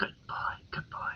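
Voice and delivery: soft, breathy, hushed whisper under the breath. Rewarding the dog with a ration, whispering. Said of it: "just whisper".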